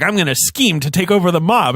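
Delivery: put-on villain voice sounding like a mobster. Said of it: "You sound like a mobster".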